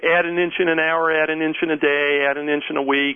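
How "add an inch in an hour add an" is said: usual speaking voice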